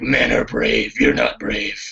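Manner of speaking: gritty, rough, barely intelligible growl. Quoting a line from a fight scene: imitating Affleck's growl. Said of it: "that Affleck growls at".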